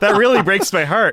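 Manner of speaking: high, heavy, sorry, laid-on guilt-tripping tone. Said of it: "lays a giant guilt trip".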